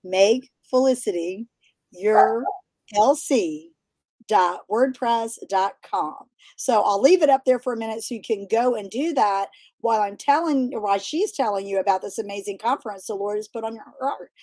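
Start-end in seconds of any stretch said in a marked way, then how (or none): 0.1-6.1 deliberately slowed-down speech. Repeating a web address for viewers so they can write it down: saying it slower. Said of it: "I'll say it again slower".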